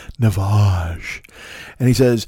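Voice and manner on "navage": mock creepy ad announcer voice, lower. Mocking a nasal rinse commercial: imitating a creepy ad announcer. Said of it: "The way he says it is so creepy".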